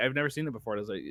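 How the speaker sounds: usual speaking voice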